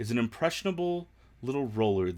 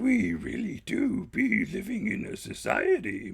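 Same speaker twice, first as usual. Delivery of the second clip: creepy put-on character voice; 10 semitones higher than usual. Speaker tries saying a line Yoda style, creepy Yoda voice. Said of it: "In creepy Yoda voice".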